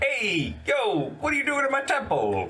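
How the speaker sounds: Italian-accented speech.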